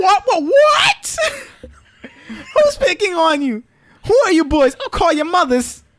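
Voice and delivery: very high, loud voice swooping all over. Retelling a video game scene, doing Aunt Sheila's voice. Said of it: "you didn't do Sheila's voice right".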